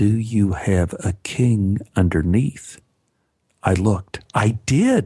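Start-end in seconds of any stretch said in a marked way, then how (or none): 0.0-2.8 quiet, soft delivery. Sally leans in during a card game and repeats her question, restated quietly. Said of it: "Sally leaned in and restated quietly".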